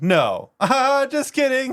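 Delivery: put-on yelling. Recounting customers in line repeating the same joke, imitating someone yelling. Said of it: "he was like yelling too".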